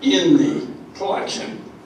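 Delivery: voice giving out to a near whisper.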